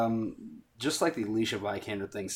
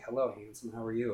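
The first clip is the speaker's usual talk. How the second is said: put-on cooing baby talk; 4 dB quieter than usual. Speaker describes a movie scene where an animal is rescued; Cara Delevingne baby talk. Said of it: "kind of almost baby talking it".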